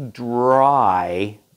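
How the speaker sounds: leaning heavily on the word 'dry'. Explaining what this machine is meant to pick up, emphasis on 'dry'. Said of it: "emphasis on dry".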